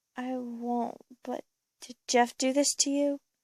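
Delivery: ordinary delivery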